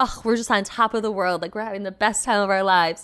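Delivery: dry, sarcastic, clearly joking cheer. Retelling what he said during a toast, imitating someone being sarcastic. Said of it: "like sarcastic".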